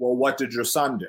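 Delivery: put-on deadpan, straight-faced delivery. Retelling a father's reply to a mother, imitating a deadpan reply. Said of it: "straight face".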